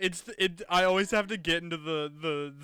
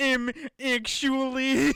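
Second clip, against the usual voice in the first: high, loud, total nerd witch voice; 8 semitones higher, 5 dB louder than usual. Speaker shows their impression of the witch: nerdy witch impression. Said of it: "my impression of the witch is she's just a nerd".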